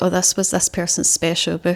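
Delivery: ordinary delivery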